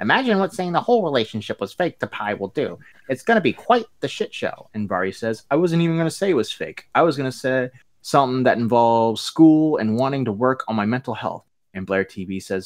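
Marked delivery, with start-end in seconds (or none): 0.0-4.7 1930s newsreel reporter voice, higher, faster. Reading out what [name] said, in a 1930s news reporter voice. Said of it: "Why does [name] sound like she's a 1930s news reporter?".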